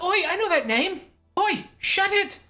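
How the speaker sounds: very high-pitched put-on gnome voice. Voicing another gnome who knows the player's name: gnome voice. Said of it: "One of the other ones goes".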